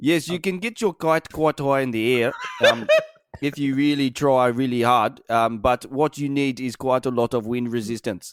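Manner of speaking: put-on South African accent. Offering a bit, speaker does a South African kite scientist voice. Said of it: "I'll do my South African kite scientist".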